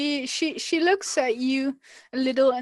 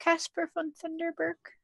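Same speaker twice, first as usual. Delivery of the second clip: tiny, very small, soft voice; 4 semitones higher, 5 dB quieter than usual. Storyteller voicing a woman who finally gives a name: very small voice. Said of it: "she says with a very small voice".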